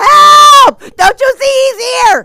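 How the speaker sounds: shrill, very high, terrified scream, first word drawn out. Retelling waking someone up in fright at night, acting out a panicked scream. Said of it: "I was screaming".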